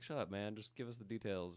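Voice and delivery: ordinary talk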